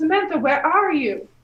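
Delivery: very loud, high-pitched yelling, calling out. In a role-play, the redhead character calls out for samantha: yelling out. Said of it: "I'm gonna yell out".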